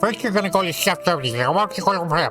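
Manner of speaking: rapid, rattled-off delivery with put-on confidence. Acting out the person on the hint line, imitating fast, confident talk. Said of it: "really fast with a sure voice like this".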